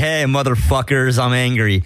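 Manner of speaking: normal talking voice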